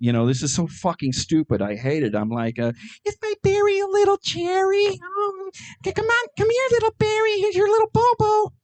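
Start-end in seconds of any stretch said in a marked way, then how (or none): 3.1-8.5 put-on girlish little-girl voice, pitched very high. A middle-aged man shows how he talks to his dog, talking like a little girl. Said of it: "my dog gets me talking like a little girl".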